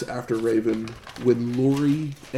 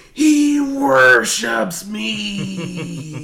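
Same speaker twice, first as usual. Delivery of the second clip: very high shrill scream, "me" stretched long; 10 semitones higher, 6 dB louder than usual. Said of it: "Raven screams".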